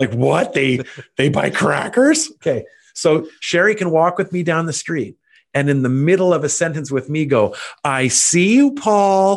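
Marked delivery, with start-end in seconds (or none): 7.8-9.4 very slow, sweet, friendly teacher voice, pitched up. Retelling how Sherry greets someone mid-sentence on the street, imitating a friendly teacher voice. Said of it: "she gives him a nice friendly teacher voice".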